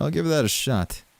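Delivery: dry, plainly insincere sarcastic tone. Answering a request to just give a story that works: sarcastic. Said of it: "I am being sarcastic".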